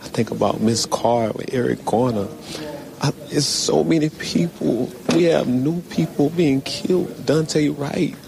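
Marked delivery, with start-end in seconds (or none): 3.0-8.1 high, rising emotional voice. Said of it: "you can hear the emotion in his voice".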